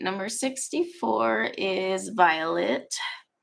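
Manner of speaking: consciously slow, deliberate reading.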